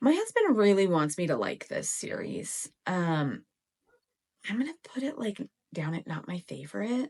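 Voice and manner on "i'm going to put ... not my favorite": half-whispered, confiding, voiced stage whisper. Rating books on a reading list, half-whispering. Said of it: "I don't know why I'm whispering".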